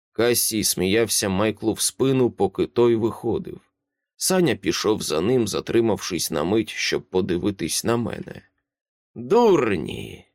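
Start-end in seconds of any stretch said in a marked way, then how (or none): 9.2-10.1 grumbled, mumbled word. Kassi gets up after Michael walks out: muttering. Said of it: "пробурмотів Кассі".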